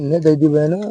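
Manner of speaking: hushed, secretive voice.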